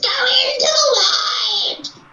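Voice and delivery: very high, very slow, shrill, put-on crazy little scream. Retelling how a little short lady screams a line: imitating a screaming lady. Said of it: "the little short lady screaming in her crazy little voice".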